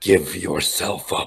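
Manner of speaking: growled in a demon voice. In a game scene, pinning an opponent and staring him down: growling demon voice. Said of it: "growls at him in a demon-esque voice".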